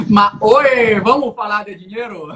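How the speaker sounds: very loud, booming put-on voice. Asked to answer as Silvio Santos: Silvio Santos impression. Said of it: "Essa foi a minha imitação de Silvio Santos".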